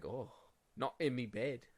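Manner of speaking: very slow character voice, every word stretched out. Imitating Captain Jack Sparrow's reaction to his bed: Captain Jack Sparrow impression. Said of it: "I don't think that's how he talks".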